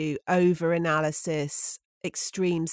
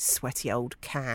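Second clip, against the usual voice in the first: mock muttering under breath, quieter and lower; 5 semitones lower, 5 dB quieter than usual. Telling what she said to herself while approaching her daughter: retelling an under-breath mutter. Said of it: "I said under my breath to myself".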